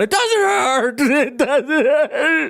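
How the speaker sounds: very slow, very high, tearful sobbing speech. The speaker acts out a pinned little brother whose laughing turns to tears: mock-tearful crying. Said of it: "laughing, saying".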